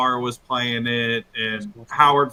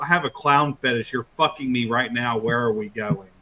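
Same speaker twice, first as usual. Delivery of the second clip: put-on very aggressive young woman voice. Retelling how a girl grabbed them by the collar, imitating a super aggressive girl. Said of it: "she was like super aggressive".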